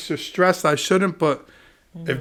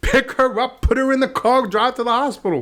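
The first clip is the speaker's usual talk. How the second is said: mock, high-pitched shouted voice; 8 semitones higher than usual. Retelling a phone call with his brother while driving: imitating himself yelling. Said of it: "I'm yelling at him".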